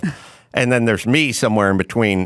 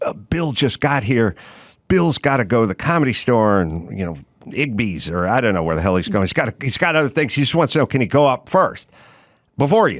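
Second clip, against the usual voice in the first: normal talking voice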